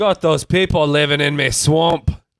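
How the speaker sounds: loud, high ogre voice with Scottish accent. Asked whether they can do a good Shrek, answering with a Shrek impression. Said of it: "You sound like Shrek".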